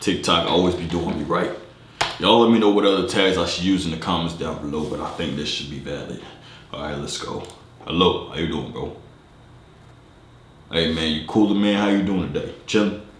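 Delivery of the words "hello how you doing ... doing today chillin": super deep put-on voice, much lower. Greeting strangers on Omegle for fun: super deep put-on voice. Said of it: "Super deep voice on Omegle".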